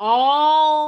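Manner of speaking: heavy stress on the word "all". Reading a favorite scripture, Proverbs three verse five, aloud, with emphasis on the word all. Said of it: "Emphasis on the word all".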